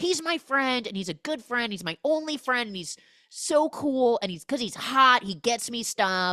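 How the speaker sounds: upset, defensive outburst. Retelling a movie scene where Kevin defends his friend: imitating upset Kevin. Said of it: "Kevin is immediately upset".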